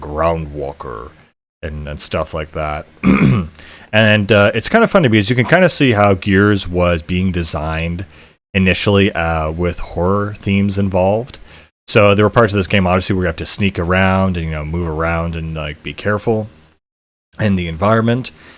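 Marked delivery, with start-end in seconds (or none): 0.0-1.1 slow, dragged-out weird alien creature voice. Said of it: "they talk in this weird voice".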